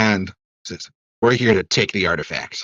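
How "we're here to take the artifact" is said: fake menacing, would-be intimidating, falling short. Game master voicing a gnome facing tied-up captives, trying to sound intimidating. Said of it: "trying to intimidate you".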